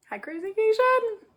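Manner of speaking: very high, tiny, squeaky cartoon mouse voice. Fulfilling a 'five hundred Minnie Mouse voice' request with a greeting: Minnie Mouse voice. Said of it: "five hundred Minnie Mouse voice".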